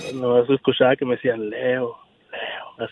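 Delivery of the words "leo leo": whispering, barely voiced, hushed. Imitating, on request, the ghost who called one's name: imitating a low voice calling. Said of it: "así en voz baja".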